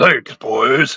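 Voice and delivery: big, deep strongman voice, dropped low. Retelling a scene where a strong guy thanks the crew: imitating a deep voice. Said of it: "he's got a really deep voice too".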